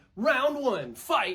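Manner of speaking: arcade-style fight announcer voice. Pitching dialogue for the game's announcer, announcer voice. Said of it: "announcer's voice".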